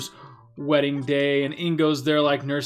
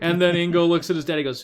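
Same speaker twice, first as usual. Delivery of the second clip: ordinary talk, nothing marked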